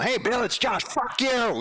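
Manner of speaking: put-on very high swooping drunken voice. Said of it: "just cussing him out".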